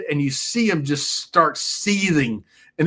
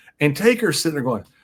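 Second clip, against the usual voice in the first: ordinary delivery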